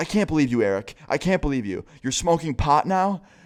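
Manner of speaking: furious, disbelieving, outraged scolding, freaking out. Retelling how a friend's mom caught the kids smoking pot, imitating an outraged mom. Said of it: "starts freaking the fuck out on all of us".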